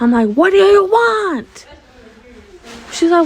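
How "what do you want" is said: mock, slow, high yell with "want" drawn out. Retelling how she grabbed their shirt demanding something, retelling own yell. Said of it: "why are you yelling at me?".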